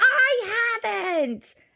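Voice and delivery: high, drawn-out, indignant, outraged delivery.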